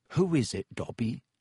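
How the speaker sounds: ordinary delivery, nothing marked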